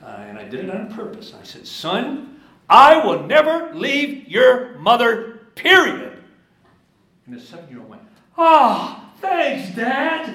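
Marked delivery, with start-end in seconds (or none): 1.7-6.2 deliberately raised, very high, very loud, slow. A father retelling what he told his seven-year-old son, in a raised voice. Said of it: "I raised my voice".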